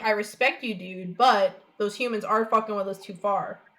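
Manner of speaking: ordinary talk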